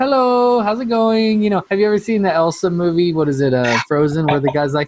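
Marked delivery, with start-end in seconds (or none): 0.0-1.4 gentle, non-threatening, friendly, high and slow. Showing how the voice changes when greeting someone at the door: put-on friendly non-threatening greeting. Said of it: "my whole voice kinda changes to".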